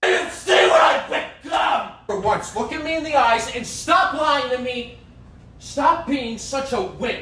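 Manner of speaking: intense, furious yelling far past normal shouting. In a drama scene, a character confronts someone, in intense yelling. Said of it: "this is not just normal yelling".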